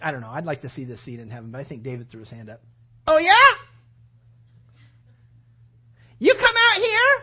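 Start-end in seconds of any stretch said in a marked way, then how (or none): 3.1-7.2 high, loud, slow, drawn-out call. Retelling David answering Goliath, in a high-pitched David voice. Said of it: "I think his voice was a little high".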